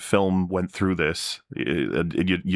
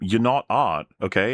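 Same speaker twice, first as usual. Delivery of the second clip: snooty, condescending lecturing tone, pitched up; 4 semitones higher than usual. Acting out a Family Guy cutaway: imitating a condescending critic. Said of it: "someone standing next to him going".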